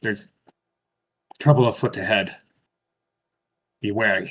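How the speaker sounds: whispering softly. Voicing a character warning the group of trouble ahead: quiet whisper. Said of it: "he just quietly whispers".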